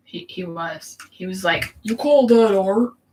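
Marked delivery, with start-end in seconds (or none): 1.8-2.9 very loud, critical, disappointed yell. Imitating a TV chef critiquing a drawing: Gordon Ramsay impression. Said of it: "That's not how Gordon Ramsay sounds".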